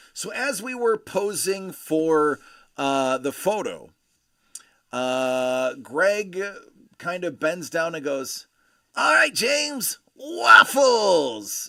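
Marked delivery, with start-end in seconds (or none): 9.0-11.7 very high, swooping, loud, bouncy cartoon voice. A man bending down while posing for a photo, Beast Boy voice. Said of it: "in his Beast Boy voice".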